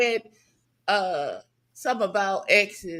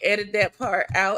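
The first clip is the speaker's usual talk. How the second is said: usual speaking voice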